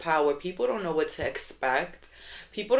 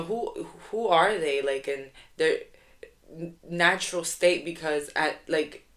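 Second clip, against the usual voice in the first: stuttering and stammering a lot, slower pace. Talking to an audience about first impressions, stuttering a lot. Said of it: "I'm stuttering so much".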